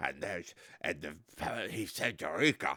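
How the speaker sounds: very low, deep, dropped film-star voice. Retelling a line from a movie: Michael Caine impression. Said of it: "Michael Caine was like".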